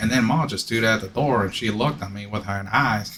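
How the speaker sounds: heavy southern drawl, flat and monotone. Mocking how the narrator of a book read it, thick southern accent, monotone. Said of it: "he had like a really thick like southern accent".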